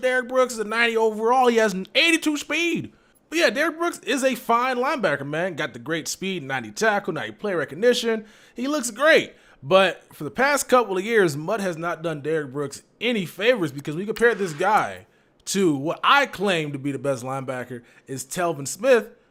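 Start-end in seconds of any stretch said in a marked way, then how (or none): 0.0-2.9 high, mocking put-on meme voice. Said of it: "I got that accent on it".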